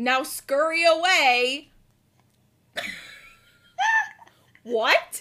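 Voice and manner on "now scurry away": put-on loud, slow, drawn-out menacing brush-off in a child's voice. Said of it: "and goes".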